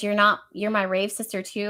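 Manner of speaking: ordinary talk, nothing marked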